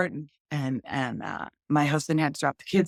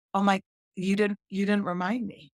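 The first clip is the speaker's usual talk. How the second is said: normal talking voice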